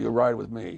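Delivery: plain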